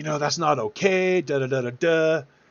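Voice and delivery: mock yelling. Retelling how an angry customer in a parking lot yelled: imitating someone yelling. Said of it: "he starts yelling at me".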